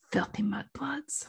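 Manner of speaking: sultry, breathy whispered delivery. Recalling an interview where he said it, do his sexy Draco voice. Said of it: "he was put on his sexy Draco voice".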